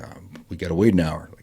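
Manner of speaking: ordinary delivery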